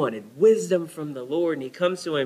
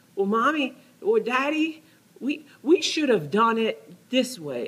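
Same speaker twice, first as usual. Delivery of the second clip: put-on tiny, high, slow small-child voice; 7 semitones higher than usual. Parent retelling their young daughter piping up from the back seat, little child voice. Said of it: "here comes this little voice".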